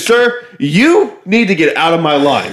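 very slow, high, stretched-out, drawn-out acted delivery. Retelling a woman's outburst at a man in a line, retelling a scream. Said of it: "she's like screaming at him so loud".

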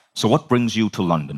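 really deep, dropped low voice. Retelling a lunch conversation with Bob Proctor: imitating Bob Proctor's deep voice. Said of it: "Bob's got this really, really, really deep voice".

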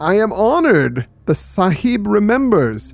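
mocking villain voice. Reader quoting the villain speaking to Steve, mocking. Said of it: "Nureddin salaamed mockingly".

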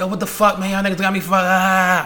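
mock mad yelling, high, word "up" stretched. Retelling what Fred yelled at them in NYC, retelling Fred yelling. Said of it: "yelling like".

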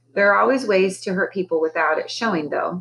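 plain

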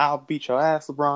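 ordinary delivery

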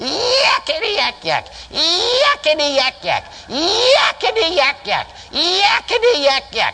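shrill imp voice, hollering. Acting out a little imp that jumped up and hollered, in a shrill imp voice. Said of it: "hollered in a real shrill voice".

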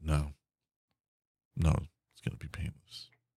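whispered, deflated, with all bravado dropped. Retelling Jet answering Hack's question: imitating Jet with the fire gone. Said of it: "all the fire's gone".

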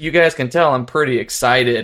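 ordinary talk, nothing marked

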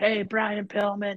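mock child voice, high and shouted. Recalling trying to get his favorite's attention in grade seven, retelling a scream. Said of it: "I am screaming at the top of my lungs".

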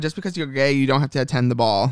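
plain

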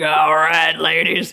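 loud put-on Irish accent. Retelling what an old man said to the group at the Blarney Stone, in an Irish accent. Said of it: "with an Irish accent".

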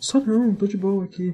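put-on calm whisper. Describing a film character who denies being a killer, imitating Michael Shannon's calm whisper. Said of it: "ele fala que não é assassino sussurrando".

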